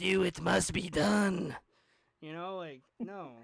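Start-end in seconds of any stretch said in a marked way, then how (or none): 0.0-1.5 put-on slow, raspy villain voice, raised. Describing a game's enemies to a friend; the Emperor's voice. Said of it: "And then the enemies".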